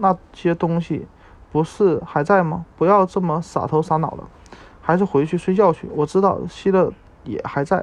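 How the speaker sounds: ordinary delivery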